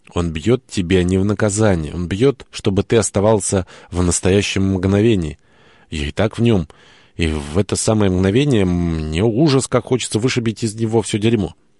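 ordinary delivery, nothing marked

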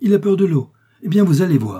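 bold, audacious, loud, high daring shout. During the hunt, Lady Frances cries out to Morton, daring shout. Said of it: "elle cria à Morton d'un ton d'audace indescriptible".

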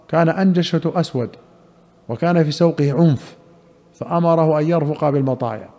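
ordinary talk

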